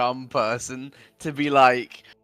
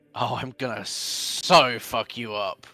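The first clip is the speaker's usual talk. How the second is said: muttered stage whisper, half-whispered under the breath; 3 semitones lower, 3 dB quieter than usual. Character greets his friend before wrestling, then half-whispered under his breath. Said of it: "He whispers under his breath".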